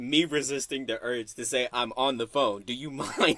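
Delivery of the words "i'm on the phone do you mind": put-on, overly calm, extremely composed, dead calm tone. Acting out a reply to the screaming on a phone call: put-on calmest tone ever. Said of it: "in the calmest tone ever".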